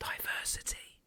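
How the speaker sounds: very quiet, hushed whisper under the breath. Saying a word others avoid, half-joking: said very quietly. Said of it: "I'll say it really quiet".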